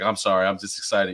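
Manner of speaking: ordinary delivery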